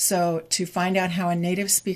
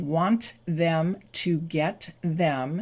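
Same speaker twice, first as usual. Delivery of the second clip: slow, careful, every sound fully pronounced. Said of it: "the real pronunciation of".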